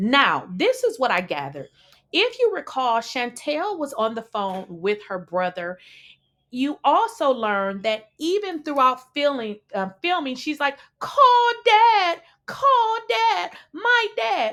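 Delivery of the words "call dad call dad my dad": put-on very high, drawn-out, whiny little baby voice. Retelling how someone kept asking for her dad: imitating a whiny baby. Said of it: "just like a little whiny baby".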